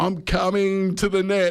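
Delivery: high, slow yelling at the top of the voice.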